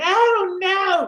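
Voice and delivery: very high, shrill, loud, shrieking scream. Describing fat melting off on a diet, imitating a scream like the Wicked Witch. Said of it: "You screaming".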